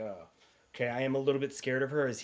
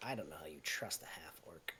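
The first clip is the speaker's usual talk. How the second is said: hushed whisper, lower and quieter; 8 semitones lower, 13 dB quieter than usual. Voicing a character who whispers doubt about a half-orc: whispering. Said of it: "he whispers".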